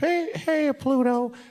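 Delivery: very high and squeaky. Putting in his ears, the speaker jokes with a Mickey Mouse impersonation. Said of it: "my um, Mickey Mouse impersonation".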